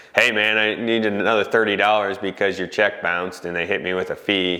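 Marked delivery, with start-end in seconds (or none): none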